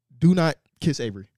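ordinary delivery

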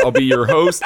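plain

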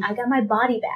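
normal talking voice

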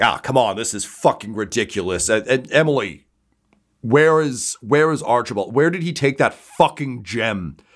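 yelling in frustration. Narrating what is heard from the floor above: Typhus yelling in frustration. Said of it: "yelling like a guy trying to figure out how to change channels".

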